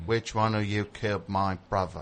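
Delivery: put-on British accent, "brother" said as "bruvver". Asked to show an accent, the speaker tries a line: british accent. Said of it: "I'll do my British accent".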